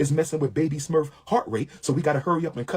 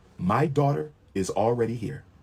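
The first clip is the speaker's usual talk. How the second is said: put-on dead-level, flat, low, emotionless monotone; 4 semitones lower than usual. Retelling a phone call, imitating the woman's reply, mimicking a flat, emotionless tone. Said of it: "with no emotion at all".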